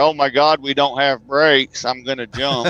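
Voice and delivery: ordinary talk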